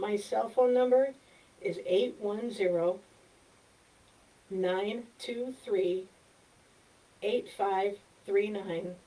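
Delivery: slow, deliberate, carefully spaced, unhurried delivery. Reading out a cell phone number for the audience to repeat, speaking slowly. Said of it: "I'm going to say it slowly".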